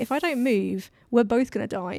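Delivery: ordinary talk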